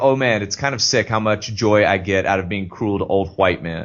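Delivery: ordinary talk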